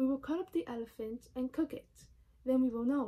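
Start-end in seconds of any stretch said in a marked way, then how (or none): none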